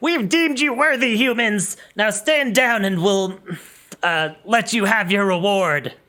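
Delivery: high, commanding, yelling goblin voice. Narrating a game scene, voicing the captain addressing the humans, yelling. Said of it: "the captain yells".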